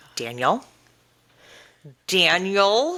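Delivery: sing-song through gritted teeth. Speaker retells how Nia reels Danny back in, Nia through gritted teeth. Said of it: "with her gritted teeth".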